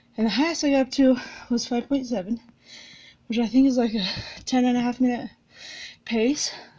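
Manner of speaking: out of breath. Speaking to viewers in the middle of a run, out of breath. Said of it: "I'm winded".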